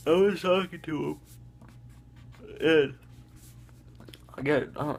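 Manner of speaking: speaking through a yawn. Telling a story about a science test, yawning a lot. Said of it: "I'm sorry, I'm yawning a lot".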